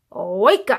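loud, rude, ill-mannered bratty voice. Reading a story aloud, the balloon wakes the child in an ill-mannered voice. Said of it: "the balloon spoke in a very ill-mannered voice".

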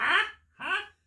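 very high, loud, squeaked, baffled huh. Retelling a film scene where the old villain can't hear: imitating old Lo Pan, hard of hearing. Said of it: "when he's old Lo Pan in the wheelchair".

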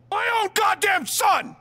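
loud shout. In a drama scene, a father cries out about his own son: loud shout. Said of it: "That was loud".

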